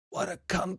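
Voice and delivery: husky, breathy, hoarse and hushed whisper. The narrator voices the moose whispering back to a player, hoarse whisper. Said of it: "In a hoarse voice, he whispers back to you".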